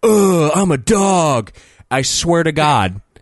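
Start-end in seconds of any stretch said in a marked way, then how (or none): 0.0-1.5 put-on, very slow, pitched-up, dragged-out drawl. Retelling how the speaker answered a guy by copying him: mimicking a guy's voice. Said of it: "mimicking his voice".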